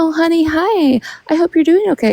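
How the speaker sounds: put-on whisper. Mocking someone who whispers sweetly to her chat: imitating someone whispering. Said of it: "if you're whispering to your chat being".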